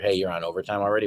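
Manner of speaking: ordinary talk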